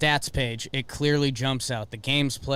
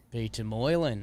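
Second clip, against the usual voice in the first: put-on Australian accent, pronounced the Aussie way; 2 semitones lower, 4 dB quieter than usual. Saying a name aloud when another speaker asks: Australian accent. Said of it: "in an Australian accent".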